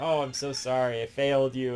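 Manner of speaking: put-on crumbling, tearful, breaking-down voice. Retelling a daughter's apology, imitating someone breaking down. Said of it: "she's just, like, breaking down".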